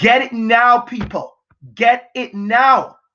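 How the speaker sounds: very slow, deliberate, drawn-out shouting. Alone in the house, addressing people, shouting. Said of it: "I don't know why I'm shouting".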